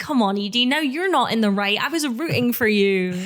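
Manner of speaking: normal talking voice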